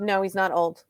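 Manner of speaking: ordinary talk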